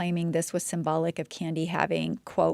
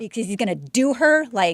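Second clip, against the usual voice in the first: heated, fired-up outburst, raised and pitched up; 5 semitones higher, 6 dB louder than usual. Discussing a killing and whether it was calculated, getting fired up. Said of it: "I'm sorry, I'm getting fired up".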